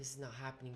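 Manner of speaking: frantic, panicked disbelief, losing composure. Retelling finding out the apartment was condemned: retelling own freaking out. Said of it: "And so I'm freaking out".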